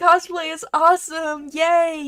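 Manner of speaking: very high, shrill, slow forced tearful enthusiasm. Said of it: "I say with tears in my eyes".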